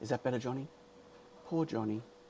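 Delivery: very quiet, hushed, soft-spoken tone. Greeting a hungover viewer in the chat, speaking in a soft voice. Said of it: "I got to speak in a soft voice".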